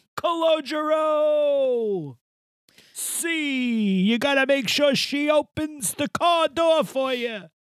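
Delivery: very high, very slow stretched holler, "see" drawn out. Quoting a movie line in character: yelling in a Chazz Palminteri impression. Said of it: "Just keep yelling things".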